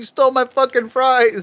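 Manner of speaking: play-acted high-pitched screaming. Imagining a local news story about a husband who throws his wife off a balcony: imitating someone screaming. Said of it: "off a balcony screaming".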